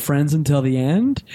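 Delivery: normal talking voice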